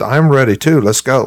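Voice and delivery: ordinary talk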